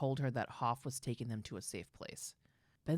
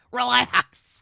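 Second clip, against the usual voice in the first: very high, very loud, shrill yelling; 11 semitones higher, 16 dB louder than usual. Imagining a spa treatment, imitating a scary German lady yelling. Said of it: "scary German lady that just yells".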